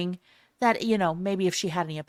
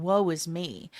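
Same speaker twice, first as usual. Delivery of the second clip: put-on weeping, woeful lamenting tone. Joking about a goddess pictured sitting and crying: mock crying. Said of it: "sitting there crying".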